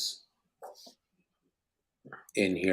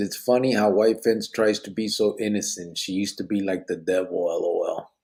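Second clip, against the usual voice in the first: ordinary delivery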